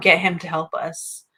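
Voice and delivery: ordinary talk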